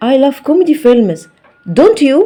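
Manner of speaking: pitch rising on don't you. Teaching english intonation with a question example, rising pitch on don't you. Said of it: "يبقى انا هنا الصوت نبرته بتعلى لما اكون بسال في الاخر".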